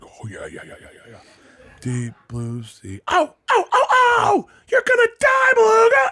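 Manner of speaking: very high, loud yell with wild swooping pitch. Retelling reading a children's book aloud to a class: Sam Kinison voice. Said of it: "I'm just doing Sam Kinnison's".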